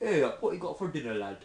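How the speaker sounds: put-on Northern English dialect. Asked on the spot to do a Northern UK accent: Northern UK accent. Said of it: "do a Northern U K accent".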